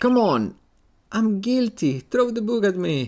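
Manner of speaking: piercing, very high, shrill screaming. Pleading to be found guilty in a courthouse lobby: screaming. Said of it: "Who's screaming like that?".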